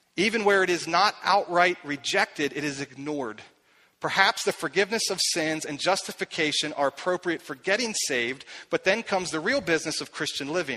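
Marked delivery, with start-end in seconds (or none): none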